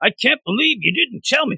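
very high-pitched put-on comic-book character voice. Recapping a story scene, voicing the Thing's line to Reed: the Thing voice. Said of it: "This is my Thing voice".

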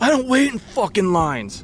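acted-out, very high-pitched, aggressive, agitated, worked-up rant. Retelling a big man who demanded gas, mock-agitated. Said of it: "hey, man, you got to calm down".

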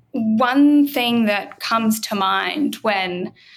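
slow, halting speech, pieced together word by word.

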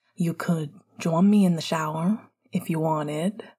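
plain reading voice

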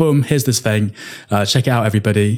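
ordinary talk

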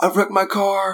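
very high, freaked-out, frantic panicked voice. Retelling a wedding DJ's phone call after a car wreck, imitating a frantic caller. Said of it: "he's like frantic".

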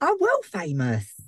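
put-on Essex accent. Players discuss Shabazz's accent, then the player voicing him speaks in Shabazz's Essex accent. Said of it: "I think you should do that voice".

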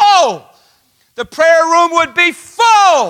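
loud, high-pitched shout, full and held long. Preaching to a church about knowing god's love: yelling. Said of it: "Sorry, I like yelling".

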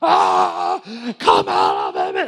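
very slow, loud, drawn-out screaming. Retelling a twenty-one-year-old commanding a demon out: imitating someone screaming. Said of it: "like, screaming".

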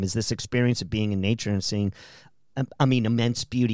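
ordinary talk

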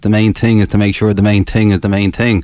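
thick put-on Dublin accent. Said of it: "in his thick Dublin accent".

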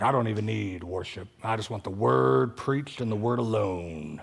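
tough-guy movie-star delivery. Quoting old guys who roll up to the speaker, Clint Eastwood voice. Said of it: "they'll say it like that too, like they're Clint Eastwood or something".

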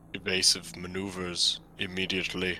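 hushed, low, pissed-off, annoyed mutter. Player, as captain in the captain's chair, orders the pilot; pissed-off Alan Rickman voice. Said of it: "you sound like a fucking pissed off".

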